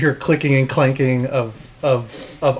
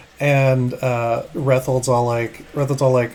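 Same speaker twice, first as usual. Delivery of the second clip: normal talking voice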